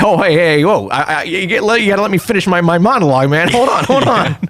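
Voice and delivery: relaxed, fearless, breezy, unbothered, light and high-pitched. Retelling how Goro reacts as Rodan attacks him mid-monologue: imitating Goro. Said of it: "he's like".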